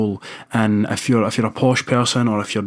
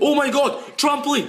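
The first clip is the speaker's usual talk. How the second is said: stunned, very high shocked outcry. Man filmed during a storm, a surprised outcry. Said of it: "he was so surprised".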